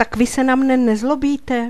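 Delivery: glad cry of delight. The boy, patted on the head by the headmaster, exclaims joyfully. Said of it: "zvolal jsem radostně".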